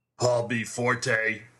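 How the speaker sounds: mean, gravel-voiced delivery. A man confronting the narrator says the narrator's name, gravelly, deep and mean. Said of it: "he said in a gravelly voice, deep and mean".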